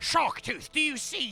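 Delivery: rough pirate-style voice. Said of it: "says to the other, it's like".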